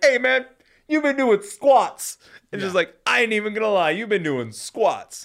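mock, shrill, high, repeated yelling. Recapping a wrestling match, the speaker repeats what a wrestler kept yelling: retelling Kofi yelling. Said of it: "he just keeps yelling".

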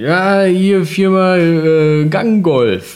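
heavy Saxon dialect, very slow. Retelling a phone call from a caller, the speaker does a hardcore Saxon dialect. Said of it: "mit einem Hardcore sächsischem Dialekt".

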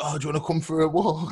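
mock sugary friendliness with menace underneath. Retelling how the lads ask someone for a walk: imitating passive-aggressive niceness. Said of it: "that sort of really passive-aggressive nice".

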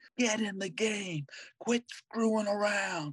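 high, barking, scolding yell. Retelling how a ball player yelled at kids: imitating a player yelling. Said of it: "he's yelling at 'em".

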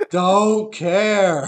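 loud, high, all-out yell at the top of the lungs. Retelling how a friend leaned back and answered praise: imitating Charlie yelling at the top of his lungs. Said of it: "yelled at the top of his lungs".

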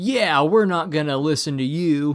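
put-on loud, full-on American accent. Retelling a movie line by a european football player: full american accent. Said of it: "in a full American accent".

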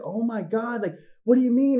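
very high, put-on panicky, freaked-out blurt. Recalling being eleven and suddenly leaving for Florida; retelling freaking out. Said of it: "I got in the car and I'm freaking out".

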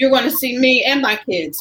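ordinary delivery

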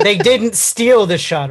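normal talking voice

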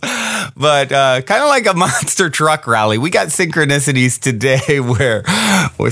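giggly, laughing through the words. Host talking to listeners, laughing at themself: giggling. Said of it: "I can't stop giggling at how ridiculous I am".

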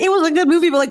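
whiny, complaining tone.

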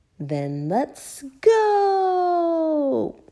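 loud, very high storybook shout, long drawn-out "go". Narrator reads a children's story, voicing the father as the family leaves, shouting. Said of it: "shouted Daddy Pig".

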